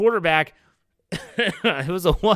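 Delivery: words breaking up with laughter. Updating the weekly quarterback DEFCON levels, laughing while talking. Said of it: "Sorry, I'm laughing".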